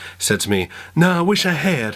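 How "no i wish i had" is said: put-on terrible, higher-pitched American accent. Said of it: "That's a terrible Bill Clinton accent".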